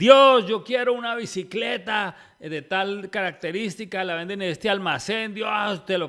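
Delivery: put-on child shouting. Retelling a joke about a child praying at the table: imitating a child shouting. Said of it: "pero a un grito entero".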